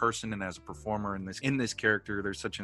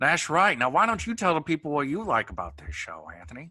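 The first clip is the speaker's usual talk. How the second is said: put-on character voice, much higher pitch; 6 semitones higher, 4 dB louder than usual. Giving the loyal listeners a taste, ask Anthony about the show in a Columbo impression. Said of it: "give the loyal listeners a little taste of that Columbo impression".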